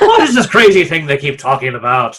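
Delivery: put-on, fake Irish accent. Repeating a question when asked to do it in an Irish accent: put-on Irish accent. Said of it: "can you do that in the Irish accent?".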